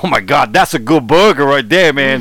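put-on street-cop voice with New York accent. Retelling what police officers from New York said: imitating New York police officers. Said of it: "These impressions are just really amazing".

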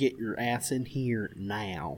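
played-up, put-on southern American accent. Speaker acting out someone throwing a fit at a kid: southern accent. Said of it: "She doesn't have a southern accent".

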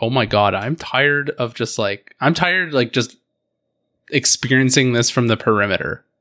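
plain

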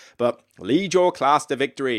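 ordinary delivery

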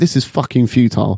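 ordinary delivery

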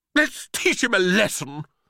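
crying out, calling. Reading a story aloud, voicing a pea calling to the other peas: cried out. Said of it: "cried another pea".

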